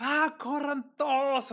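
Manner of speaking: mock shrill, very high, loud yell. Telling how someone started screaming while heading to his death, retelling a shout. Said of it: "Y empieza a gritar así".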